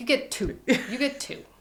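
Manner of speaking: put-on heavy Russian accent, laid on thick, high and slow. Retelling what a waxer said, in a thick russian accent. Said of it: "she's very thick Ru- Russian accent".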